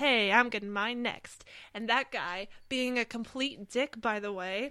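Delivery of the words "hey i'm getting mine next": put-on confident cartoon voice, louder. Retelling a scene from the episode, imitating SpongeBob saying it confidently. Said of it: "SpongeBob confidently says".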